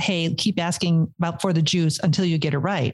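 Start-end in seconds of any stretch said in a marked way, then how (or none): none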